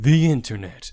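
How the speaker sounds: loud, dramatic, epic movie trailer narrator voice. Introducing the episode topic in a dramatic trailer voice. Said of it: "This is a dramatic trailer voice".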